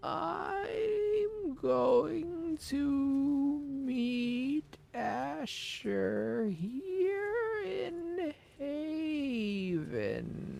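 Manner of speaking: very high-pitched, very slow, drawn-out put-on voice. Speaker does an impression, said slowly: Steven Universe character voice. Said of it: "that was my impression of a character from Steven Universe".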